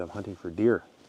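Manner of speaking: usual speaking voice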